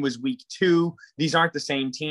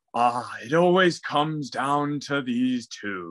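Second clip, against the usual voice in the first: put-on old man voice, lower; 3 semitones lower than usual. Voicing the narrative he keeps hearing about the matchup, in an old man voice. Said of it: "I can just hear the old man voice".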